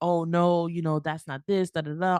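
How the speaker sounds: put-on defensive tone. Retelling own reply to a spouse's complaint: imitating a defensive reply. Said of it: "I am getting defensive".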